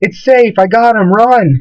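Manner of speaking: high called-out shout.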